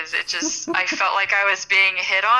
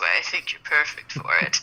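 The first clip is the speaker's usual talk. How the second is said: hammed-up, low, put-on seductive voice; 5 semitones lower than usual. Joking about the casting couch, playing someone pitching their movie: mock seductive voice. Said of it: "in my most seductive voice".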